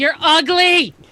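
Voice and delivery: full-volume, high-pitched shrieking yell. Game master voicing a stabbed foe yelling at a player's character; yelling. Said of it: "she just yells".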